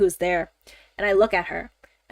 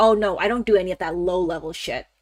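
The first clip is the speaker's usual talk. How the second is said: put-on scoffing tone. Retelling a man's reply about his finance job: imitating a scoffing reply. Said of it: "he just scoffs at it".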